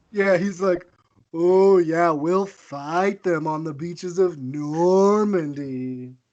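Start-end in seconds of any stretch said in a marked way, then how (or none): 1.3-6.1 withering sarcasm, slow and drawn out, put-on speech voice. Joking that wartime speeches were sarcastic: witheringly sarcastic Churchill impression. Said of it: "witheringly sarcastic speeches".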